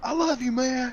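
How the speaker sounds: mock childlike shout. A parent retelling what another kid yelled as loud as he could, retelling a loud shout. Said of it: "just as loud as he could".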